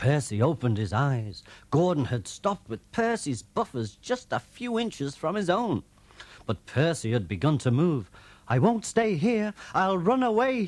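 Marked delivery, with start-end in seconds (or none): 8.5-10.6 puffed-out, frightened, panicky cry, very high-pitched. Percy the engine, stopped near Gordon, begins to move off; puffing. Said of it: "he puffed".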